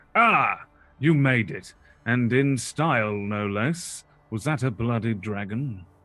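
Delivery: big, loud, booming voice. As the players approach, Harshnag steps out from behind the rocks: booming Harshnag voice. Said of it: "you hear the voice suddenly boom out".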